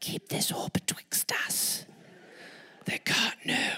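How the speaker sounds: whispered, almost inaudible, very quiet voice. Riding on horseback with companions who can't hear: speaking very quietly. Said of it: "we can't hear you".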